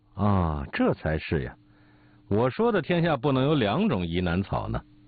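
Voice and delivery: ordinary delivery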